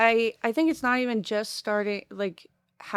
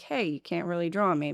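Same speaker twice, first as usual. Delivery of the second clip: ordinary talk, nothing marked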